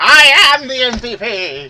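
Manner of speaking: very loud, shrill, bellowing cartoon villain voice. Agreeing that Skeletor is the real MVP, the speaker answers in a Skeletor voice. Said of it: "I still can do that voice".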